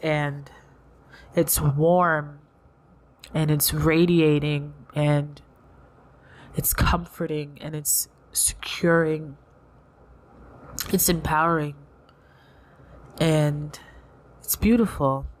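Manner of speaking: tearful, warm, drawn-out, near tears. Speaker holds a card and is brought to tears: tearful. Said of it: "It's certainly bringing me to tears".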